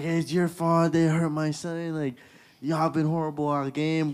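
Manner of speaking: put-on, furious, high, angry screaming. Retelling how a player's dad screamed at the referee: imitating someone screaming. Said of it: "is screaming at the referee, like".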